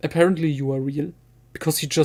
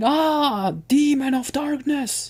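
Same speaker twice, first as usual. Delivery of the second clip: put-on shrill, very high screaming cry; 10 semitones higher than usual. Retelling a scene from a story, imitating Trioculus screaming. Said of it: "Trioculus is screaming".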